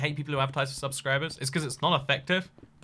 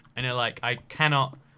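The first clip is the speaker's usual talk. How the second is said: ordinary talk, nothing marked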